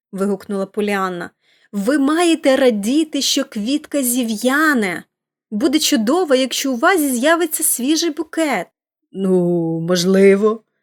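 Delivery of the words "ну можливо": reluctant, grudging tone, lower pitch. A woman at the mirror answering praise of her hair, reluctantly admitting. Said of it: "неохоче визнала жінка".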